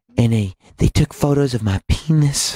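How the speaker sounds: formal televised public-statement delivery. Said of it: "where he goes".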